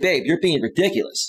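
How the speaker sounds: ordinary delivery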